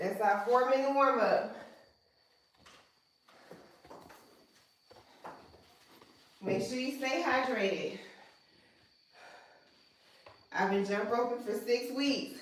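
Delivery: winded, out of breath, breathing hard. Host leading an online workout right after the warm-up, out of breath. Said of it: "I'm still out of breath".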